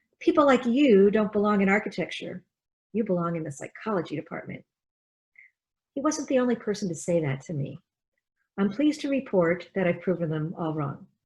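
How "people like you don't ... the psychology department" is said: ordinary talk, nothing marked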